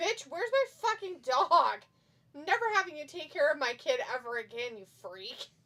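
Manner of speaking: acted, very loud, high, outraged furious yell. Acting out a dog owner confronting the aunt who lost the dog: acting out being furious. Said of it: "I'd be so mad".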